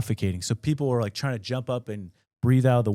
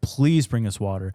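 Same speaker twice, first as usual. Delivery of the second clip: put-on desperate, pleading, begging voice; 2 semitones lower than usual. Retelling how the prisoners begged the guard for water: imitating a desperate plea. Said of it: "they're pleading with the guard".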